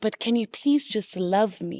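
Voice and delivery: acted-out begging, pleading voice. Recounting a stage role where she pleads with a man, retelling a stage plea. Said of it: "She pleads with this man and she goes".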